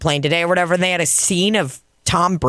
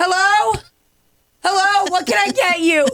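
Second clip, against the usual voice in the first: play-acted timid, scared, very high-pitched calling out. Calling through the plexiglass to customers sitting at the bar, mock-scared. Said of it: "And I just act scared".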